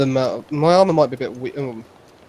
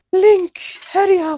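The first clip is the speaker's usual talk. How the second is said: put-on loud, very high, weird anime-dub British accent; 5 dB louder than usual. Mocking a game character's voice: imitating Zelda's anime British accent. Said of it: "It's that anime British accent".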